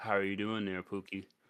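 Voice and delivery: quiet whispering. Acting out hugging him from behind and leaning to his ear, whispering in his ear. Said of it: "whisper in his ear".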